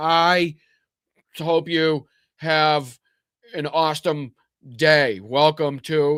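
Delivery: very slow, half-speed robotic voice. Mocking a guy who sounds slowed down, doing a slow robot voice imitation. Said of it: "he sounds like a robot in half speed".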